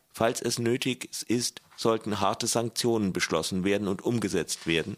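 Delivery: ordinary delivery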